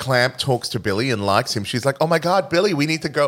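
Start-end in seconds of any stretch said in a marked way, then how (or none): 2.0-3.3 put-on New York accent, much higher. Recalling a film scene, a fan imitates billy's boss talking to billy: put-on new york accent. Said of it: "What this accent is".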